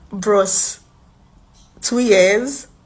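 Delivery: loud laughing delivery full of disbelief.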